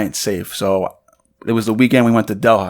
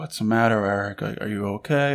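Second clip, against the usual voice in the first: put-on worried tone, quieter; 7 dB quieter than usual. Retelling how she asked about him: imitating someone worried. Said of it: "you could just see she's worried".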